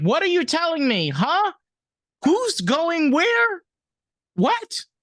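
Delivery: very high, slow, sing-song, swooping dog voice. Imagining what the dog Louis is saying: voicing Louis the dog. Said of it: "he's like".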